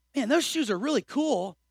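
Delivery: sincere, genuine, admiring tone.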